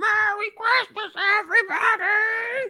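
very high-pitched, wild, crazy scream. Describing the end of It's a Wonderful Life, imitating Jimmy Stewart's crazy scream. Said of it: "He screams".

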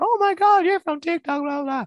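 very high, loud, shrieking screams. Retelling a crowd circling the speaker: imitating people screaming.

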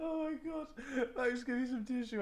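crying with laughter. Asking Max for a tissue after a bad attempt: crying with laughter. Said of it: "I'm crying".

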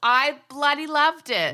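loud, high, drawn-out, booming enthusiastic exclamation. Giving an opinion on a film just watched: loud exclamation. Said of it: "Whoa, that was loud".

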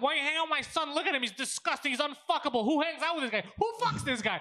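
high, yelling, ranting voice. Retelling how a mother yelled from her balcony: imitating the mother yelling. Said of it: "And she's yelling".

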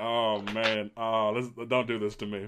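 plain

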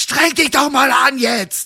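high-pitched, put-on shout. Retelling how a caster demanded more effort from a young model: imitating someone shouting. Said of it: "Wirklich so".

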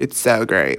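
spoken in an American accent. Praising a Vegas residency show, slipping into an American accent. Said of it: "Why did I say that in American accent?".

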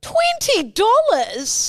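high, drawn-out shocked disbelief.

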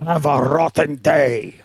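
exaggerated cartoon bad-guy voice. Chatting about who will win the final, slipping into a Wario impression. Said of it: "my Wario impression".

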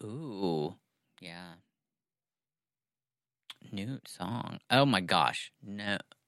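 quiet mumbling under breath. Asked to share news with the class before starting, mumbling to self. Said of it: "Now you're mumbling to yourself".

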